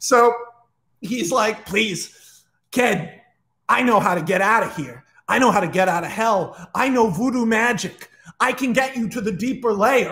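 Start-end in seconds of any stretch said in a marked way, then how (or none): 1.7-10.1 put-on, fake-nice villain voice. Retelling a movie scene, Chucky pretending to be nice: Chucky done as DeVito. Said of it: "DeVito from Always Sunny is sort of how I picture Chucky".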